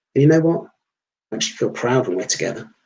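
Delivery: ordinary delivery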